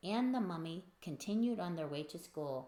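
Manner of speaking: plain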